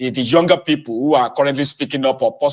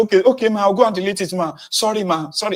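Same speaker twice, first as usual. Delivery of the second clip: put-on, high, frantic, panicky pleading tone; 7 semitones higher than usual. Imagining how the woman was expected to respond: mock panicked apology. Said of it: "she was supposed to panic and say".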